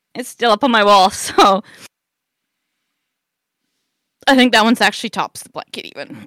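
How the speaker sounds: on the verge of crying. Sharing a Christmas memory, close to tears. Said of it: "this one's going to make me cry".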